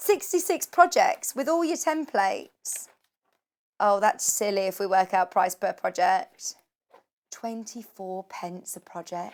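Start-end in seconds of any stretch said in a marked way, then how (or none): 7.3-9.3 barely audible, very soft, hushed and quiet. Presenter working out a book's price per project, said really quietly. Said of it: "I've said that really, really quietly".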